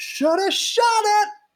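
very high, piercing, loud shout. Retelling a moment at the end of a show in a blackout: imitating Meryl shouting. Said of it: "Meryl shouts".

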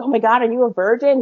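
acted-out, gushing, thrilled, really excited eager tone. Retelling a date's question in bed, imitating someone getting really excited. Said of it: "really excited".

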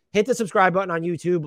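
normal talking voice

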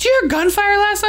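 high, fast acted yell. Retelling the neighbor banging on the door next morning; retelling a neighbor's yell. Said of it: "she's like yelling at me".

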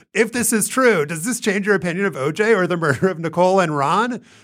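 high, all-caps shout. Reading the original all-caps poll question aloud: shouting. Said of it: "so I'm shouting".

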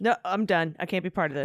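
normal talking voice

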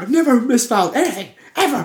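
acted, furious, very loud, high shout. Retelling how a man jumped up over a misplaced file: imitating a furious outburst. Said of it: "he jumps up and he's like".

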